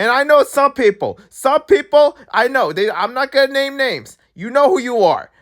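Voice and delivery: high shout. Calling out unnamed people who disagree about the award: yelling. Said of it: "I'm yelling like you can hear me".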